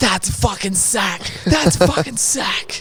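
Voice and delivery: mock furious, aggressive, high-pitched outburst. Acting out what an immature guy says when he gets mad, imitating someone really angry. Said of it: "when he's really angry, he goes".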